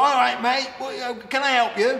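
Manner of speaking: put-on Southwest English accent, very high-pitched and loud. Retelling first meeting a friend at a window: Southwest accent imitating Matt. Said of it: "He had that Southwest accent".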